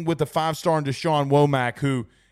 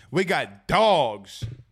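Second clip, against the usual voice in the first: put-on excited, hyped fan voice, "dogs" drawn out. Repeating what excited fans say: imitating excited fans. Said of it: "I'm gonna just repeat some people".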